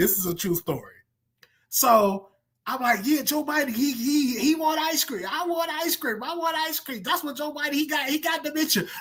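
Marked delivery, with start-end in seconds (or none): 3.0-8.8 put-on shrill, very high-pitched yelled rant. Retelling what they yelled in the psych ward: retelling own yelling. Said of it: "I'm yelling this in the psych ward".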